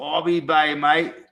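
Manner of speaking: put-on Australian accent. Saying goodbye to Mike, trying your best Australian accent. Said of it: "That's my best Australian accent".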